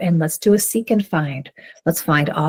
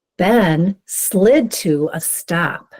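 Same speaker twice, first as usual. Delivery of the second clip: very slow, smooth, words scooped into phrases. A speaker models reading a sentence aloud for listeners: reading in smooth phrases. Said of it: "scoop the words into phrases".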